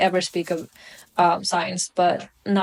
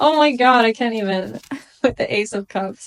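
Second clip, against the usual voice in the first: words broken up by laughter, talking through giggles; 3 semitones higher than usual. Reading tarot cards for a viewer, laughing while talking. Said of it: "I'm sorry for laughing".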